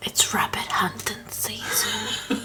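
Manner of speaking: slow, hushed whispering.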